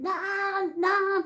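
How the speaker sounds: high, far-off screaming call.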